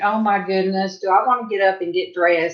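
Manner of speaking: normal talking voice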